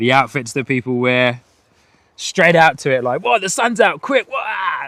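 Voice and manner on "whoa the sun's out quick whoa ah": giddy, overexcited high-pitched whooping. Imitating people in the UK reacting to a bit of sunshine: imitating people excited about sunshine. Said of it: "just how crazy people go".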